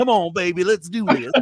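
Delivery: on-air radio disc jockey voice and patter. Describing a robot character who talked like a radio dj, radio dj voice. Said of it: "he talked like a radio D J".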